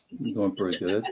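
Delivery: dejected, downbeat, low, soft, depressed-sounding. Answering the host who asks how everybody is doing today: sounding depressed. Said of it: "You sound depressed".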